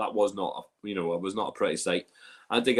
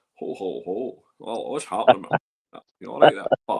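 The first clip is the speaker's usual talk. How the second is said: put-on Scottish film star voice, louder; 6 dB louder than usual. Retelling what was said to people who didn't recognize them: Sean Connery impression. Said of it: "I actually did a Sean Connery".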